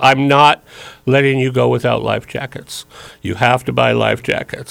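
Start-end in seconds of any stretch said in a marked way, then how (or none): none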